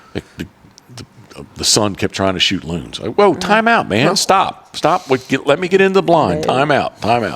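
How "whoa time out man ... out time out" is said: mock easygoing, lighthearted, very high-pitched. Retelling telling a hunter to stop shooting loons: retelling a lighthearted warning. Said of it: "lighthearted saying it".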